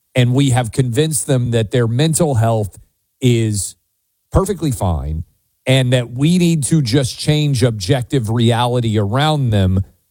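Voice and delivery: ordinary talk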